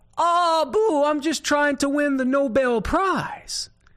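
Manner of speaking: put-on high-pitched hollering voice with Cajun accent. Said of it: "Thibodeau hollered back".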